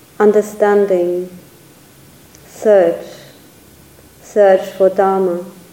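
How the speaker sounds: slow reading with long pauses between items.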